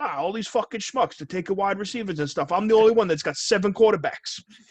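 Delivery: Italian-American father voice. Describing someone's bit about an Italian dad doing a fantasy football draft, imitating an Italian dad. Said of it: "Italian dad does fantasy football".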